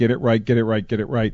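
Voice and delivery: ordinary talk, nothing marked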